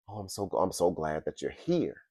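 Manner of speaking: put-on distressed young woman. Retelling a young woman running up from her house, imitating a distraught girl. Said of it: "Because she was distraught".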